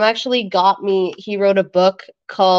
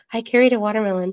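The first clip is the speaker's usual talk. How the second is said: put-on nervous voice. Retelling a scene from Dirty Dancing: imitating nervous movie character. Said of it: "she gets so nervous talking to Patrick Swayze".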